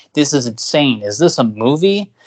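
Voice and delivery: ordinary talk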